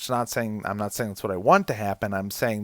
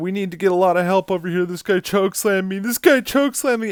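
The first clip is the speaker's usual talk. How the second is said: high, hitching voice catching on the edge of tears; 10 semitones higher, 6 dB louder than usual. Speaker imitates a video game guard calling for help: imitating someone almost crying. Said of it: "You can hear him almost crying under his voice".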